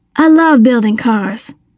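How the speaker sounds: plain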